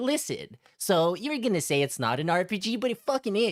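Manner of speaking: play-acted, irritated, condescending, talking-down lecturing tone. Mocking a streamer in a clip, imitating someone talking down to people. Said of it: "talking down to people like".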